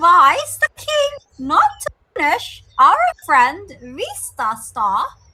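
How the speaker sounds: squeaky little mouse voice, very high, swooping. Voicing a mouse character with a slipper in her face: squeaky mouse voice. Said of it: "maintaining her squeaky mouse fur voice".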